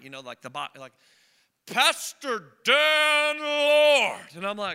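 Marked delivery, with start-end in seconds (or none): 1.7-4.2 very loud, booming fight announcer voice, drawn out. Speaker retells hearing his name called as he got out of the car: booming fight-announcer call. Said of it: "I hear this booming voice like the announcer at a fight".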